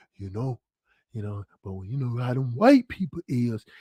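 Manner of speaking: hushed, very quiet half-whisper. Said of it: "She would go whispering".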